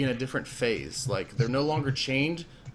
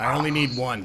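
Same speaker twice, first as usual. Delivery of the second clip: dark, deep, demonic voice, louder; 4 dB louder than usual. Voicing a werewolf-like overseer answering a player: dark, deep, demonic-like voice. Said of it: "He sounds very dark and, ... very deep, ... demonic-like".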